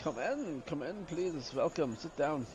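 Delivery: poorly done put-on Eastern European accent. Attempting an accent on request, terrible Eastern European accent. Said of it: "I'm gonna attempt a, a terrible uh, Eastern European accent".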